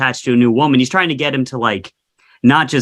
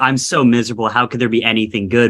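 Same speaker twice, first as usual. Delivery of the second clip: mock-sarcastic delivery; 2 semitones lower than usual. Acting out Romeo's reply about his misery: imitating a sarcastic tone. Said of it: "kind of sarcastically".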